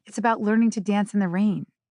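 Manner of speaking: ordinary talk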